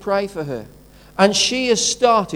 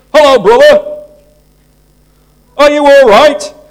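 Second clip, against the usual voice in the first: very loud, booming, high-pitched voice; 6 semitones higher, 13 dB louder than usual. Retelling how a man greeted people in church: imitating a loud man. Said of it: "he was a very loud man".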